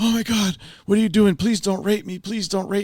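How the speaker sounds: mock shrill freak-out, loud, very high, panicked. Retelling a story where a maid freaks out at a man who just woke: imitating a freaked-out woman. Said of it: "she freaks out like".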